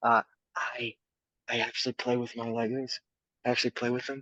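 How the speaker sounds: hushed whisper. Chatting with others while in public, whispering. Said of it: "I'm gonna have to whisper because I am in public".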